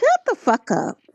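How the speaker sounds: motherly mom voice. Describing what would reveal someone's real voice, doing a mama voice. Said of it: "hear your mama voice come out".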